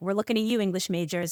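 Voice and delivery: ordinary delivery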